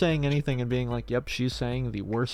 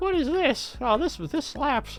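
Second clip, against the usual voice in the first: very high, squeaky cartoon mouse voice; 13 semitones higher than usual. Imagining an old lady discovering Pokemon, in a cartoon-mouse-like old lady voice. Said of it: "that was kind of like like a like a little bit of a Mickey Mouse voice".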